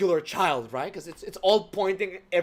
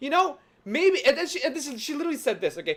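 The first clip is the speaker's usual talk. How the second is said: plain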